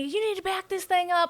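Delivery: hollered, loud, high-pitched yelling. Retelling a partner's order after the camper fell off: imitating someone yelling. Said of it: "So he's yelling at me".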